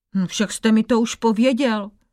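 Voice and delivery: ordinary delivery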